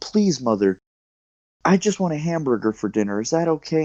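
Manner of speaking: earnest, put-on begging tone. Retelling asking mom for a hamburger at eleven: imitating own childhood begging. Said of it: "I begged my mom".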